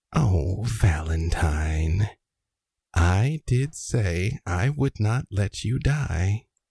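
whisper in the ear. As game narrator, the speaker plays a voice addressing Valentine; whisper in the ear. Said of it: "you hear a voice whisper in your ear".

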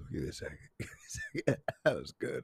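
talking through laughter. Cracking up at own joke, asking for a second: laughing while talking. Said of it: "I really am crying right now".

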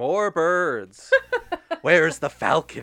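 booming, drawn-out, swooping loud screaming. Mocking a lazy film, picturing a drunk director on set; imitating Hitchcock screaming. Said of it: "just screaming like".

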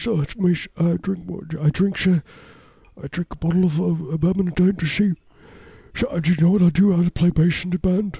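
high-pitched, rambling rock-star voice. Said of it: "he sounds like this".

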